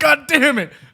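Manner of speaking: shrill, high, loud, frustrated angry outburst. Imitating the other speaker punching the laptop: imitating someone cursing in anger. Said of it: "such a funny image of you going like".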